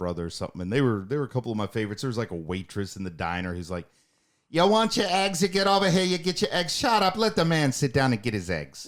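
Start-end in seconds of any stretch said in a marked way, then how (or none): 4.5-8.9 rough put-on Boston accent, very high and loud. Imitating a diner waitress from a show, putting on a rough Boston accent. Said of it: "that lady was pretty rough too".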